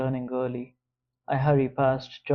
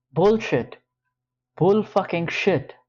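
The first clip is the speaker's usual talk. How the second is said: loud, high, furious, angry shouting yell; 6 semitones higher, 5 dB louder than usual. Reading a scene where a man confronts the narrator: yelling in anger. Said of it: "Why are you yelling?".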